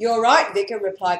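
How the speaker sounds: ordinary delivery, nothing marked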